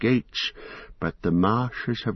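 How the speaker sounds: plain reading voice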